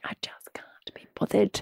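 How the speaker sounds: soft, unvoiced, can't-be-bothered whisper.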